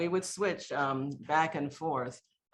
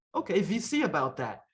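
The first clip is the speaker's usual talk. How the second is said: put-on thick German accent, slower; 3 semitones higher than usual. Retelling Gunther's reply to him, in Gunther's thick German accent. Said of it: "Gunther had a real thick German accent".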